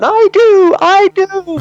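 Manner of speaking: put-on yelling. Retelling calling out from the bleachers to a hockey coach: retelling own yell. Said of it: "So I yelled out".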